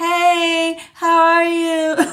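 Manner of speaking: high pitch with a stretched, drawn-out hey. Speaker doing a card reading imitates the spirit voice she hears: Cat voice. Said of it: "she would talk like this".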